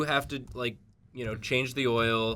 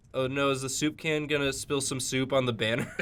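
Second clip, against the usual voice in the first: ordinary talk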